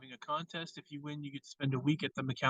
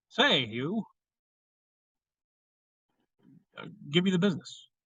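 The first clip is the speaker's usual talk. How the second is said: put-on old Hollywood period-film mid-Atlantic accent; 3 semitones higher than usual. Talking about old period movies and how everyone talked: mid-Atlantic accent. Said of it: "talked with a mid-Atlantic accent like this".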